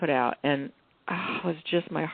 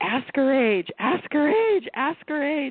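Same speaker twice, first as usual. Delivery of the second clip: put-on screaming, very high pitched, shrill and repeated; 9 semitones higher, 4 dB louder than usual. Retelling yelling at a TV documentary: retelling screaming at the TV. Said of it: "screaming, you know, at the T V".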